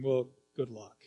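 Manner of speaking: low, half-swallowed grudging mumble under the breath. Retelling what you actually said when you missed your chance, muttering. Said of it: "Something like muttering".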